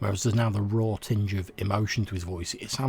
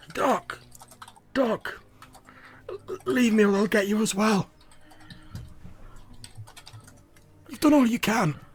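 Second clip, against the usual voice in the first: very high, very slow, far-off, slightly panicked voice; 13 semitones higher, 3 dB louder than usual. Voicing a distant figure calling from the mist: slightly panicked voice. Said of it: "a slightly panicked voice going".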